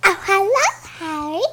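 high-pitched moan. Greeting Harry in character: Moaning Myrtle voice. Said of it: "I'm doing Moaning Myrtle".

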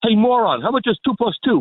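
acted-out, high, barking radio-host yell. Imitating a teacher yelling at a student in class: imitating Ted yelling. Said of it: "does Ted yell at his students like he yells".

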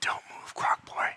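hushed voice. Voicing a character who whispers a threat into a player's ear: whispering. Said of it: "she whispers in your ear".

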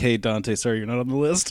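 normal talking voice

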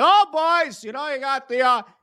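imitated loud, boisterous voice. Speaker retells how Bundy's voice changes, doing big, boisterous Bundy. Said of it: "He goes from big, boisterous Bundy".

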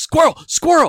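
put-on very loud, very high, excited kid's shout. Retelling a kid behind them yelling at a squirrel, imitating a child yelling. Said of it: "he's just yelling at it".

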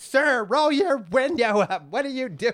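mock very high, shrill, mad scolding voice. Retelling what a lady told the driver ahead, acting out a mad lady. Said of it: "I saw one lady got real mad".

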